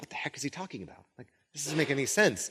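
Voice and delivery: very soft, quiet, muttered, baffled whispering. Retelling a group's confused reaction to a vague saying: imitating someone whispering.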